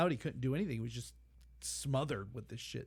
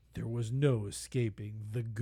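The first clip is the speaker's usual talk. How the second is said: mock very grave, solemn, deep documentary-style voice; 4 semitones lower than usual. Quoting a man from a disaster documentary, the speaker imitates a very serious voice. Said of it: "in like this very serious voice".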